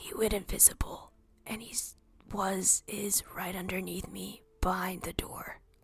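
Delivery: speaking in a whisper. Quietly passing a message through a sending stone: whispering. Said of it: "Very quietly, I whisper into the sending stone".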